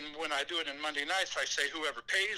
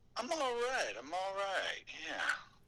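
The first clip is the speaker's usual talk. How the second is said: slightly hoarse voice, plain talking; 4 semitones higher, 4 dB quieter than usual. Answering a caller's greeting on the phone: a little hoarse voice. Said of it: "your voice sounds a little hoarse".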